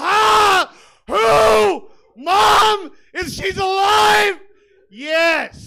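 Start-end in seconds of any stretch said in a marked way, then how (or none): 0.0-4.4 shrill, very high, very loud blurts, "who" drawn out. Doing a bit about a brother: imitating his brother's way of talking. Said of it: "Just a lot of".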